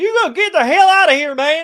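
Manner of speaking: bad put-on Texas accent, shrill, very loud. Acting out how they answered him: terrible Texas accent. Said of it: "That's a terrible Texas accent".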